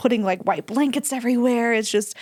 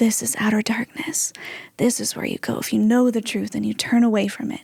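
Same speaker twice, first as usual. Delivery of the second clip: stage-hushed, theatrical low voice. Retelling what people told them in a blacked-out room, in a very quiet voice. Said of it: "in a very quiet voice".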